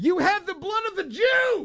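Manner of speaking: put-on, very high, shrill yell. Recalling haggling with their younger son, the speaker retells yelling at him. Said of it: "and I yelled".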